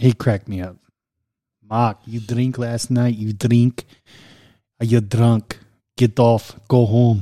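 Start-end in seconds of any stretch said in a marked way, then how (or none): 1.7-7.2 put-on Russian-accented speech. Impersonating the russian man he used to work for, in a russian accent. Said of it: "I used to work for a Russian".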